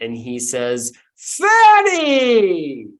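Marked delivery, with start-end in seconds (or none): 1.2-2.8 very high, very loud, joyful swooping voice. Voicing Santa Claus opening the door to an old friend: happy and joyful greeting. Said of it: "happy and joyful to see an old friend".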